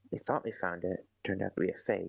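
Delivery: whispered voice. Speaking in character, still whispering the news: whispering. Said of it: "Still whispering, by the way".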